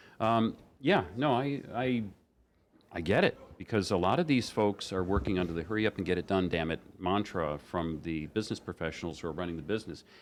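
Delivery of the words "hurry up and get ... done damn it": ordinary talk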